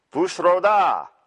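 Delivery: Transylvanian-sounding voice. Attempting a dragon shout: Transylvanian accent. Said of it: "That's definitely Transylvanian".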